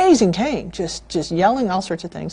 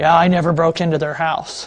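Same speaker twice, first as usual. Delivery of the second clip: put-on raspy man's voice; 3 semitones lower than usual. Retelling what the accused man said in court: imitating a man's raspy voice. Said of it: "The guy had a raspy voice".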